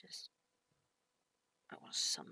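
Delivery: deep, low, hushed whisper. Acting out someone answering from behind a half-opened door, in a deep voice. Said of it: "a deep voice".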